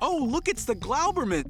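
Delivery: put-on warm voice with a light New York accent. An animated character's line, voiced as a Henry Winkler impression. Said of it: "an impersonation of the Fonz".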